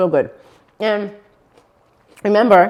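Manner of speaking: speaking with mouth full. Tasting the finished dish, talking while chewing. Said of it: "let me chew. That's rude".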